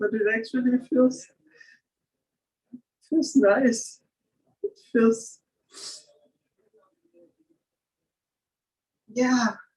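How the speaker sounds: weeping, in tears. Sharing a personal feeling, crying. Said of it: "I'm crying".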